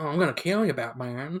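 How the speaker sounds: put-on Western accent. Imitating Jared Leto's Joker from the film: Western Matthew McConaughey type accent. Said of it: "a Western Matthew McConaughey type".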